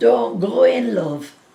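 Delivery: put-on northern English Lancashire accent. Repeating what someone shouted at her, now in a Lancashire accent. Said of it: "that in a Lancashire accent".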